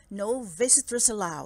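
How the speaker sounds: plain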